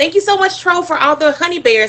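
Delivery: high-pitched, excited, gushing voice. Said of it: "you guys probably are used to me saying".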